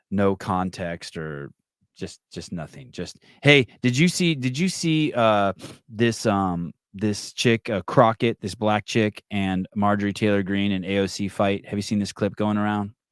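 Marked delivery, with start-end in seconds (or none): none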